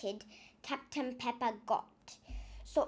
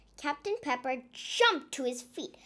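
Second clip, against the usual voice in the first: ordinary delivery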